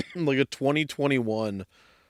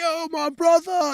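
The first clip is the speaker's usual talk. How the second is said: shrill, very high, loud scream; 4 dB louder than usual. Retelling a loud customer's morning greeting: imitating someone screaming. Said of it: "and he's screaming".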